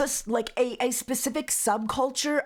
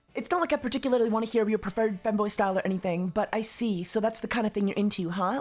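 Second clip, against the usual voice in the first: ordinary talk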